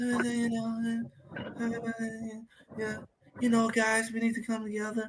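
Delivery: very quiet, soft, hushed voice. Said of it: "two [name] looking and talking quarterbacks".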